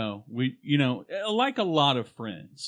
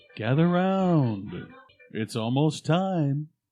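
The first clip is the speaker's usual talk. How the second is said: slow, drawn-out announcer voice. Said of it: "announcer voice".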